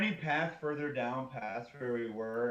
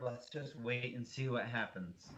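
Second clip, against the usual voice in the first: barely-there, hushed half-whisper; 7 dB quieter than usual. A player character hiding in a tent tells the others to wait, half-whispering. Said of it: "I whisper".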